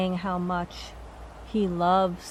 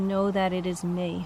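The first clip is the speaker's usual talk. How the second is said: plain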